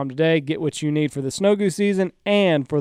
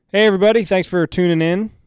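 loud, booming, attention-grabbing voice; 3 semitones higher, 6 dB louder than usual. The host opens the podcast to everybody, speaking loud. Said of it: "It's kind of loud there".

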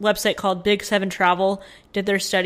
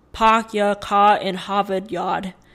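very slow Boston accent with dropped r sounds. Speaker demonstrates one of the most parodied accents: boston accent. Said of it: "they just don't say their R's as much".

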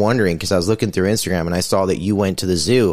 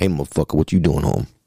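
angry put-on cat voice, pitched lower; 4 semitones lower than usual. Voicing a cat scolding its owner for coming home: Eddie Murphy voice. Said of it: "Eddie Murphy, and the cat kinda looks at you like".

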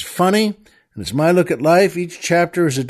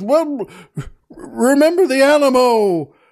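put-on high-pitched hollering; 7 semitones higher than usual. Storyteller tells a joke, imitating the oil man yelling. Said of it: "now just the oil man yells".

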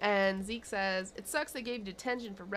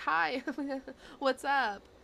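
high, bubbly voice with a little giggle; 5 semitones higher than usual. Recapping a scene where a new girl at school greets a boy, imitating Tammy's giggly greeting. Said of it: "little giggle thing".

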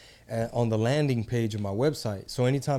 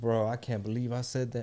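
put-on giggling, much quieter; 4 dB quieter than usual. Recalling hearing old things they had said, the speaker retells their reaction: retelling giggling. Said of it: "And I'm just like giggling".

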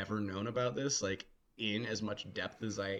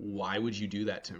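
re-enacted flat deadpan delivery, slower. Recounting their own reply after being shown a picture, retelling a deadpan reply.

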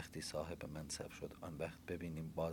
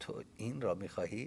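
snickering, higher and louder; 5 semitones higher, 7 dB louder than usual. Reading a novel, a woman laughs and asks the narrator a question, with a snicker. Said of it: "خجسته پوکی خندید و گفت".

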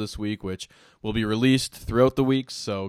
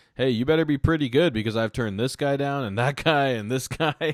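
put-on joking tone, raised pitch; 3 semitones higher than usual. Retell what the Nuggets GM says when he passes Murray, imitating someone speaking jokingly. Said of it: "And he jokingly".

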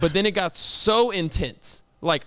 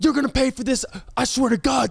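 acted-out screaming, higher; 7 semitones higher than usual. Retelling how a man screamed at another in front of students, imitating someone screaming. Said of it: "screaming like".

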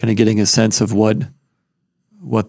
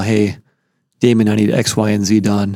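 ordinary talk, nothing marked

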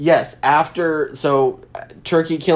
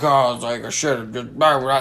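mock mumbling under the breath; 3 semitones lower, 3 dB quieter than usual. Retelling a movie scene where the father speaks: imitating muttering under breath. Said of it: "talking under his breath".

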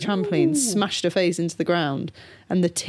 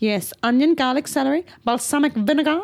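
character voice, pitched up high; 8 semitones higher than usual. Retelling a TikTok sound where Elmo cooks: imitating Elmo. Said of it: "he's like".

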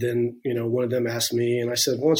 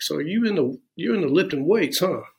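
put-on heavy Alabama accent laid on thick, pitched up; 5 semitones higher than usual. Retelling a question from a first sergeant from Alabama, in a thick Alabama accent. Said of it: "he had this real thick accent".

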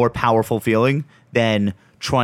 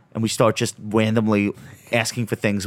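ordinary talk, nothing marked

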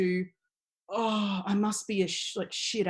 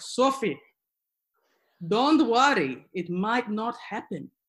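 put-on, laid-on thick Greek accent. Recalling exam stress at seventeen, imitating her dad's thick greek accent. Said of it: "thick Greek accent".

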